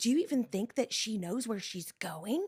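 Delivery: loud, failed stage whisper. Retelling what the church ladies said in the van: imitating a loud failed whisper. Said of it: "they think they're whispering".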